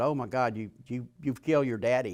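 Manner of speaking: normal talking voice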